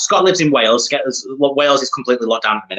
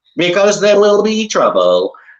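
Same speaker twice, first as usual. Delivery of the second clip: put-on, robotic-sounding voice; 6 semitones higher than usual. Retelling a scene that cuts to an answer after Giles asks why, in a cheap Stephen Hawking robotic voice. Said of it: "talking as a robotic voice".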